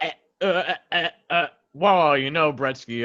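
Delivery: mimicking glitchy cut-out audio. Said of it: "it would go from me go".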